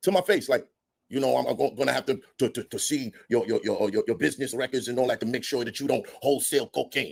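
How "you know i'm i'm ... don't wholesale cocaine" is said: imitated Spanish accent. Retelling a landlord's question about business records: imitating landlord in Spanish accent. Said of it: "he sounds like he's doing a, a Spanish accent".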